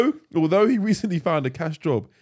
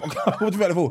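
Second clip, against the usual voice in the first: fast, laughing, mocking sarcastic eagerness. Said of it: "I think he's procrastinated".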